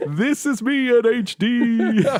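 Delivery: put-on very high old announcer voice. Podcaster imagining showing old episodes in a retirement home, old person voice. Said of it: "old person".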